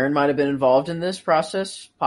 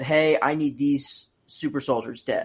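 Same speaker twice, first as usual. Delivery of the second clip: usual speaking voice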